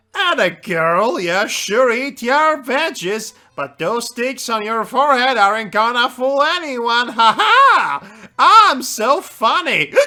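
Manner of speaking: put-on drunk, giggly rambling with drawn-out "ha". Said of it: "And drunk".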